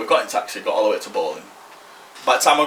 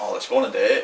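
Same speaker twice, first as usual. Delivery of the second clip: usual speaking voice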